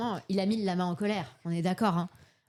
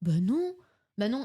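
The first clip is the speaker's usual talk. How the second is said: put-on slow, talked-down baby talk, toddler-style; 2 semitones higher than usual. Retelling how the father spoke to the man, imitating him talking down. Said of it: "il lui a parlé un peu comme un débile".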